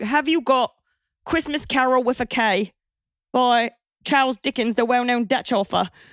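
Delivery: dopey, silly put-on idiot voice, high, kind of Cockney. Quoting a Monty Python bookshop sketch from a CD, Monty Python idiot voice. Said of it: "so there's there's that idiot voice".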